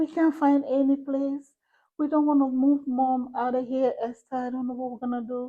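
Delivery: acted crying, tearful pleading voice. Retelling how a family came back to her, imitating someone crying. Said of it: "came back to me bawling".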